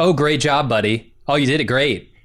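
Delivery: heavy, insincere, dripping sarcasm. Imitating a compliment that never sounds sincere: sarcastic Ryan Reynolds voice. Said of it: "I'm never going to actually believe that Ryan Reynolds is giving me a compliment".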